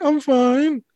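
put-on high-pitched little-kid voice. Describing a man he greeted every day, imitating a childlike voice. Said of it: "That's what he would just sound like that".

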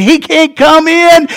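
high, drawn-out yell like a crowd of demons. Imagining demons at hell's gates, acting out demons yelling. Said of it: "all the demons were yelling".

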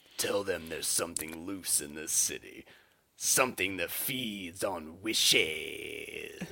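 slow, drawn-out, each word stretched long. Quoting the djinn's closing line from a movie, imitating a drawn-out line. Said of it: "draws it out".

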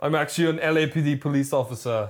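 put-on Austrian accent. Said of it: "they have this Austrian accent".

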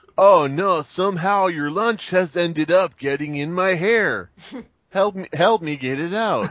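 put-on Eastern European accent. Mocking a story line as if it were an Eastern European porno: mock Eastern European porn voice. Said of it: "like an Eastern European porno where it's like".

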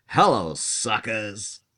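brash, really loud, high-pitched holler. Acting out a planned greeting to everyone at the pub: shouting loudly. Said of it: "Really loud to everyone in there".

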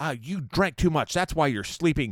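annoyed, angry tone. Retelling what the stewardess said to a sleeping drunk friend: imitating an angry stewardess. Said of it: "pissed off".

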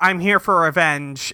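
ordinary delivery

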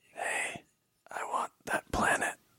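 super quiet, very slow breathy whisper. Imitating an actor's line from a movie: super quiet Eddie Redmayne voice. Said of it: "super quiet".

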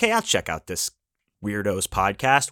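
ordinary talk

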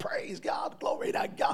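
acted, breathy, whispered, exultant exclamation. Retelling praising God aloud in a department store: retelling own shouting. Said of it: "I began to shout".

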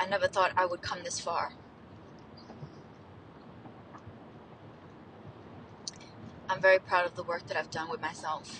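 voice on the verge of tears. A scientist documenting their own self-love journey, near tears. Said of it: "I keep feeling moments of wanting to cry".

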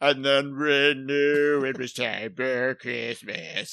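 slow, sickly, dragging cartoon elf voice. Mocking an old cartoon's elf voices: imitating a fat, sickly cartoon elf. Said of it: "a fatter, sicker elf who's like".

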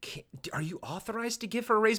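hushed stage half-whisper, dropped low. Retelling a scene where a character asks about a raise: imitating a half-whisper. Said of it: "a whisper".

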